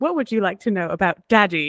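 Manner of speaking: digital assistant tone. Speaker describes their phone assistant activating mid-conversation and mimics it: Siri voice. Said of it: "which is like".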